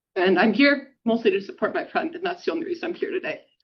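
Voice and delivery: speaking through tears. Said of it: "I hate that I'm crying".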